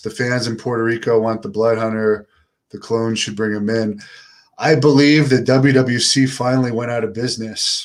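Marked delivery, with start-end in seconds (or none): none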